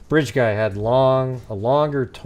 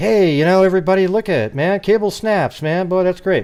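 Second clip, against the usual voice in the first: whole different voice with changed attitude, pitched up; 7 semitones higher, 4 dB louder than usual. Showing that a shift in attitude changes how a voice sounds: different voice, altered attitude. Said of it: "I could talk like this".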